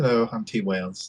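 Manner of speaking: terrible put-on British accent. Introducing oneself as co-host at the start of the show, in a horrible british accent. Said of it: "I do this horrible British accent".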